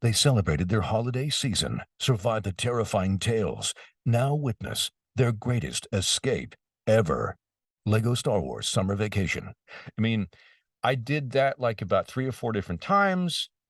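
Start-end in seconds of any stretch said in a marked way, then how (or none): 0.0-9.5 big epic, eventful movie trailer narration voice. Speaker demonstrating the trailer narration they recorded, in a big movie trailer voice. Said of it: "it can be a big voice because it's eventy".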